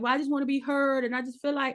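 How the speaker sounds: weepy, tearful, crying, pleading voice. Retelling how a wife on a reality show started crying: imitating someone crying. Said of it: "she started crying, like".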